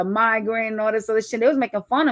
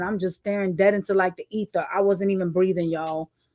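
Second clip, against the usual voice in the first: normal talking voice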